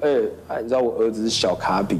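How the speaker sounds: usual speaking voice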